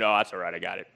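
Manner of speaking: very low, very deep, faked manly voice. Answering someone offering help in the plumbing aisle, in a put-on deeper manly voice. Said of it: "make your voice a little deeper".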